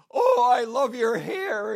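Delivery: put-on crying speech. Retelling what a lady in a grocery store said to the speaker, imitating someone crying while speaking. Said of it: "and she starts crying".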